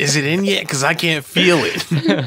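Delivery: high, raspy, nasty-sounding put-on voice. Joking about a woman with a Boston accent in bed: imitating a raspy, nasty voice. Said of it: "she's got like a raspy, nasty ass voice".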